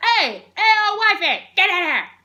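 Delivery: furious yell, very loud and high. Retelling how Xerxes calls for his wife: angry Xerxes shouting. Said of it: "Xerxes gets really mad".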